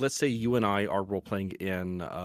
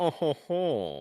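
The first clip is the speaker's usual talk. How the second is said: slow, snobbish, snooty put-on laugh. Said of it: "it's this really snobbish voice".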